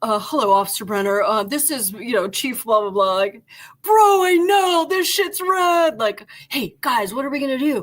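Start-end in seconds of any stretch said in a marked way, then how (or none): 0.0-3.1 mock stiff, formal phone voice. Retelling a phone call from the chief, imitating a formal phone voice. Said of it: "he's like".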